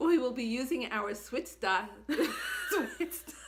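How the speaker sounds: loud, laughing till crying through the words.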